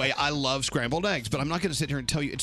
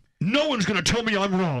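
mock shrill, raised, high-pitched yell; 6 semitones higher, 5 dB louder than usual. Retelling what Scary screamed at the room: imitating Scary screaming. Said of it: "Scary screams at the room".

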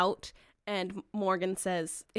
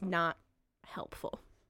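halting broken speech, quieter; 3 semitones lower, 7 dB quieter than usual. Quoting what it says back when offered the sand, in very broken language. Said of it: "very broken language".

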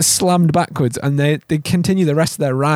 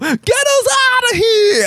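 put-on New York Queens accent; 3 dB louder than usual. Retelling a movie scene, voicing the lady from Queens in a strong Queens accent. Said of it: "the most fucking Queen's voice I've ever heard".

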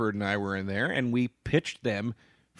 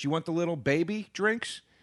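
acted, high-pitched, teasing, mocking jab; 5 semitones higher, 3 dB quieter than usual. Retelling what a favorite bartender says: imitating a mocking bartender. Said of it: "but she mocks me".

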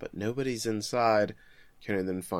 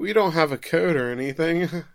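high, bad, fake-casual mock smooth voice. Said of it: "Ever the smooth talker".

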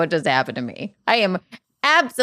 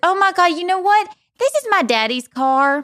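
very high-pitched put-on Southern accent; 10 semitones higher than usual. Speaker retells her own reply to a woman, put-on Southern accent. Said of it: "I put on my Southern accent".

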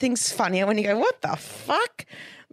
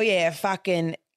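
put-on blokey, swearing pub owner voice, lower pitch; 3 semitones lower than usual. Retelling how blokey pub owners swore in meetings: imitating a blokey pub owner. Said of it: "they'd swear and they go".

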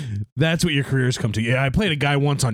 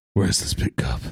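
doped-up superhero voice, much lower; 13 semitones lower than usual. Host opening the Saturday show, doing a doped-up Batman voice. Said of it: "why you're doing doped up Batman".

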